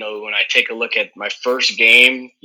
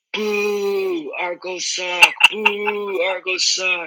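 put-on high, slow, drawn-out, jeering little girl's yell; 9 semitones higher than usual. Retelling how a little girl on the field booed the team: imitating a little girl yelling at the top of her lungs. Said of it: "yelling at the top of her lungs".

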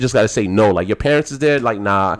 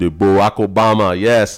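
put-on West Indian accent; 2 semitones lower than usual. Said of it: "He, he West Indian".

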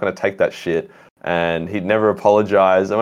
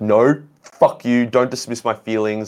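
put-on heated, hurt, angry yelling outburst; 3 semitones higher than usual. Retelling how a friend reacted at a party: imitating someone yelling. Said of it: "starts yelling at me".

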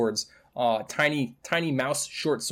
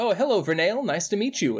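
put-on small, high child's voice with ringing metallic echo; 9 semitones higher than usual. A game master voices a hulking clockwork creature greeting Vernail, Fullmetal Alchemist-style metallic child voice. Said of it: "like almost like the voice of a child with, like, a metallic echo".

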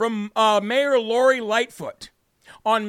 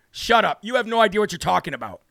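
ordinary talk, nothing marked

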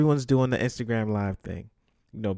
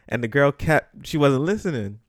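normal talking voice

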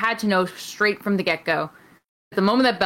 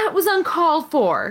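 put-on yelling, pitched up; 8 semitones higher than usual. Retelling someone leaving the ring after a match: imitating Dana shouting. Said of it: "shouting back at Shayna".

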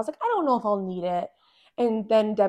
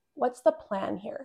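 mock-deadpan delivery, much quieter; 5 dB quieter than usual. Retelling a question a man asked her during labor, mock-deadpan question. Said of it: "he looked at me like deadpan".

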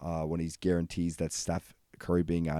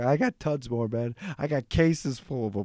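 mock defensive, protesting, pitched-up insistence; 7 semitones higher, 3 dB louder than usual. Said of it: "He gets all defensive".

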